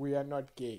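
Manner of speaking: formal, declamatory presidential podium voice. Retelling the president's speech at the un summit: imitating the president's speech. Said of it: "he was like".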